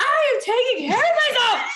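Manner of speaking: exasperated very high tone. Retelling a woman's reply to his checking on her; imitating her frustrated voice. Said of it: "I could hear it to her frustration in her voice".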